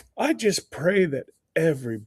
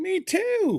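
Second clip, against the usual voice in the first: much higher playful put-on voice. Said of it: "And I'm like".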